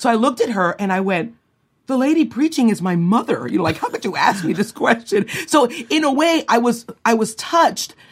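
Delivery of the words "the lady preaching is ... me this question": high, proud, indignant little retort. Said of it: "a proud little thing".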